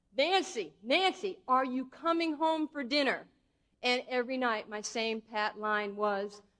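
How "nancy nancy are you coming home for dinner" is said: loud far-carrying call. Retelling a mother calling from the street corner: imitating mother yelling. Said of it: "my mother standing at the corner just yelling".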